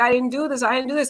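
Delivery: mock tearful, weeping, sobbing crying. Retelling how a falsely accused man pleaded: imitating a man crying. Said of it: "He was just crying, crying, crying. He was like".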